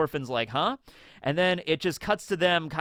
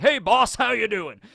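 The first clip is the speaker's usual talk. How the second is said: big pirate captain voice, pitched higher; 6 semitones higher, 4 dB louder than usual. Retelling the show, imitating the big pirate captain greeting the boss. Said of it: "the big pirate dude that's like".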